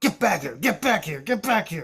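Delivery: acted-out exasperated, frustrated shouting. Acting out someone yelling after their dog instead of using a leash, mock yelling at a dog. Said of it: "walks around yelling at his chihuahuas".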